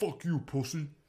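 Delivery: put-on ballplayer character voice, jeering and taunting. Retelling a lip reading of a ballplayer: Madison Bumgarner impression. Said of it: "a solid impression of Mad Bum".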